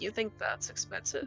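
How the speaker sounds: barely audible, very quiet, breathy whisper. Among friends discussing a price, the speaker whispers an aside. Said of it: "whisper to my voice like".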